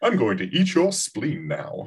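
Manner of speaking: terribly posh, upper-class orc voice. Imagining a fantasy world with posh-sounding orcs, the speaker voices one: posh orc voice. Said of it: "very posh, sounding orcs".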